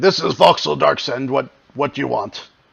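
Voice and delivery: imposing, demanding tone, as if owning the place. Answering the intercom as Voxel Darksend, in a booming voice. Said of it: "booming voice say".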